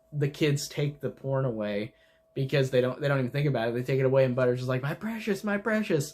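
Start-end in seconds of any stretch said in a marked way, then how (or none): 4.8-6.1 high, greedy creature voice, each word drawn out. Retelling a cartoon scene where a boy acts like Gollum: Gollum voice. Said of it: "he becomes like Gollum".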